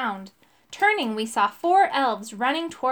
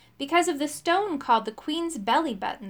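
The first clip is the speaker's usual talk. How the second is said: ordinary delivery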